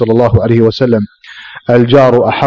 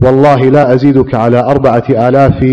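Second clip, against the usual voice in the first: usual speaking voice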